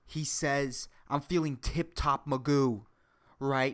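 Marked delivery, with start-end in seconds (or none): none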